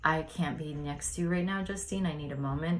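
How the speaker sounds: usual speaking voice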